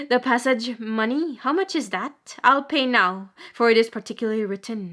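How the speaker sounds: ordinary delivery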